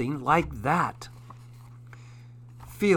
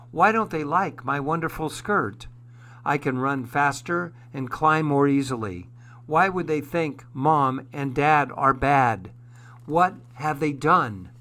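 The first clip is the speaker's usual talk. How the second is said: ordinary delivery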